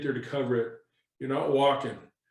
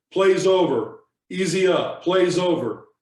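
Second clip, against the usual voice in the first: big, loud, carrying, commanding voice; 4 semitones higher, 5 dB louder than usual. Working his way around a pile after a tackle, calling out in his big voice. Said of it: "using my big voice".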